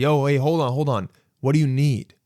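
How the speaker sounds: ordinary talk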